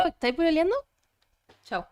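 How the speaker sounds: put-on Chilean Spanish accent. Asked on stream to do a Chilean accent, she tries a Chilean Spanish accent. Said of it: "That was good, actually. The second part".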